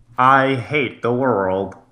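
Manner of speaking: gruff cartoonish voice. Asking the other speaker about his impression, then doing it: Squidward impression. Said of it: "Was that your Squidward?".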